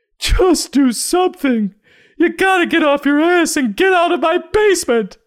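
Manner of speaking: very high, shrill, loud, desperate nagging voice. Mocking a character who now sounds like a desperate mother: desperate mother voice. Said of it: "starting to sound like a desperate mother".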